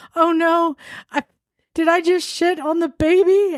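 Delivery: put-on, very high-pitched, drawn-out alarmed panic. Retelling a movie scene of a friend in labor, imitating a panicking friend. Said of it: "and her friend's panicking".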